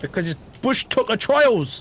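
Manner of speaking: clumsy, bad put-on Geordie accent. Friends gaming and chatting about a show filmed in australia; bad geordie accent. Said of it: "That was a really bad accent".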